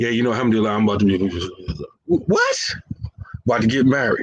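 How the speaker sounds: very low, deep, indistinct, swallowed mumble. Acting out a brother mumbling about getting married, imitating his mumbling. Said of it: "even brothers start mumbling".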